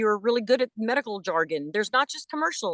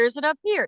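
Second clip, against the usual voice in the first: much higher voice placed up in the head. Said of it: "where she's placed vocally".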